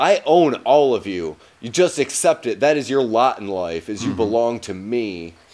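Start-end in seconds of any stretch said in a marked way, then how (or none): none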